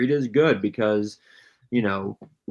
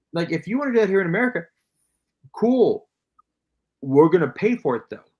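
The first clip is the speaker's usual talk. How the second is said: high-pitched yelling; 7 semitones higher than usual. Speaker ranting that Americans would pay for factory work here: yelling. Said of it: "my wife's telling me I'm, I'm yelling".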